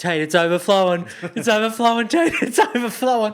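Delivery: put-on very high, loud, panicked alarm. Retelling what a pilot said in a lobby, imitating his panic. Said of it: "you can hear the panic in his voice".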